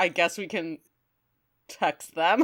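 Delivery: hesitant, faltering, stop-start delivery. Retelling how Ratchet said a line: halting Ratchet voice. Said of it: "it kind of haltingly".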